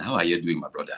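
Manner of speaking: casual, relaxed Nigerian accent. Speaker demonstrating the accents they can do, [name]'s Nigerian accent. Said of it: "and then this is Niger [name]".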